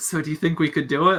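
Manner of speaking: soft hushed half-whisper. Voicing a character asking companions a secret question: half-whispering. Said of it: "whispering to Nostra and Jailbird".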